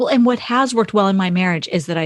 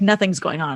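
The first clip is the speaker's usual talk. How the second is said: ordinary talk, nothing marked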